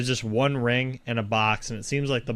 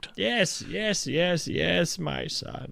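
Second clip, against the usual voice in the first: put-on creaky, crackly, high elderly shopkeeper old-man voice; 6 semitones higher than usual. Narrator voices the old man at the counter greeting a visitor, old man voice. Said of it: "an old man stands up".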